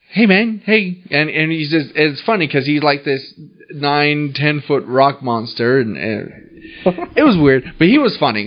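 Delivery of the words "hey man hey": put-on really high voice, much higher. Quoting a nine-foot rock monster from New Zealand, imitating a really high voice. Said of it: "We had a really high voice".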